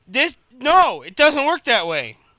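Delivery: loud complaining tone. Retelling bringing up a problem: imitating own loud complaint. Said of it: "sorry, I got loud as fuck".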